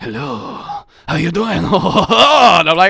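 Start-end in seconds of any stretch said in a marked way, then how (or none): 0.0-1.6 put-on French accent, higher pitch. Retelling walking into the living room, the speaker voices her greeting in a put-on French Daddy voice. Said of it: "it's French Daddy".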